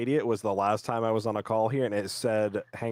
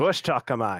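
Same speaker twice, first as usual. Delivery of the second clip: put-on Australian accent; 2 semitones higher, 4 dB louder than usual. Joking about faking a trip to australia: best aussie accent. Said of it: "I'll just throw on my best Aussie accent".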